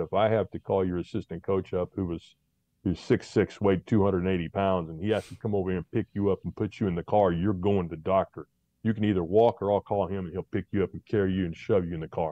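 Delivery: ordinary talk, nothing marked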